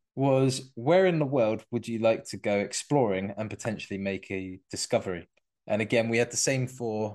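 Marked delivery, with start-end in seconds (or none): none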